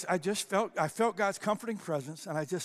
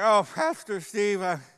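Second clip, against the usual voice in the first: put-on drunk sobbing man's voice, louder; 2 semitones higher, 8 dB louder than usual. Retelling what a drunk man in the front row said: imitating a drunk crying man. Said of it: "slobbering all over me".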